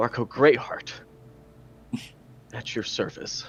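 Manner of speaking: slight, brief stutter, voice catching for a moment. Playing a prisoner introducing himself to his captor: Marco's slight stutter on name. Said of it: "he kind of stutters a little bit".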